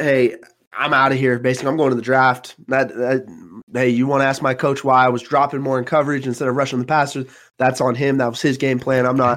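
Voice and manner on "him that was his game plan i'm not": normal talking voice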